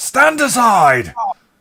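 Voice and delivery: very high, loud, barked shout. Voicing a coachman aiming a blunderbuss at a player: coachman shouting. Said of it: "And he shouts".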